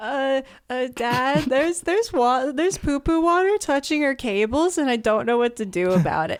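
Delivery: high-pitched, panicked, pleading voice. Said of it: "I go up to him and I'm like".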